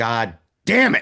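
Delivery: put-on mad, frustrated little angry outburst. Retelling spilling a beer during a movie: imitating an angry curse. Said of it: "I'm so mad".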